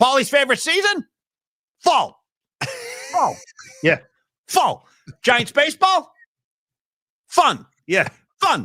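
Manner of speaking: very high, shrill put-on voice, swooping and bouncing. Reading a submitted super aloud on air, Chris Russo voice. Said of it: "in the Chris Russo voice".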